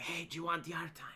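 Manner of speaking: barely audible, very quiet whisper. Retelling how guards offer yard time at five am: imitating a guard whispering.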